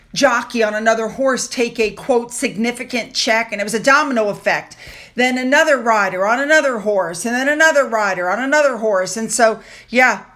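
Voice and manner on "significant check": ordinary talk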